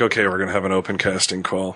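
ordinary talk

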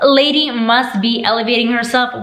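ordinary delivery

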